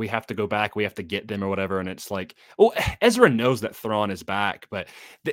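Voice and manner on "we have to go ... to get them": usual speaking voice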